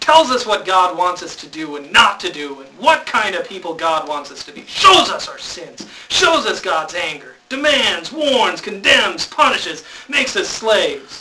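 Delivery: voice full of anger, stern delivery. Explaining the law from a page in a handout to listeners, in an angry voice. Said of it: "I'm going to say it in an angry voice too".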